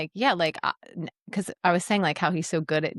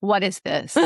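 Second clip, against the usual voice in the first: put-on stone-cold, flat tone; 2 semitones higher than usual. Retelling how a guy reacted to a key handed over: imitating a stone-cold question. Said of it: "cold, stone cold".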